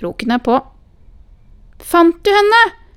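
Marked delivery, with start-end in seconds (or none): 1.8-2.6 very high-pitched, very loud, projected voice. A grandchild calling to her grandmother, calling out. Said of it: "Ropte [name]".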